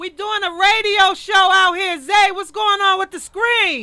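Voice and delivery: loud, slow, high yelling. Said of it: "I like yelling".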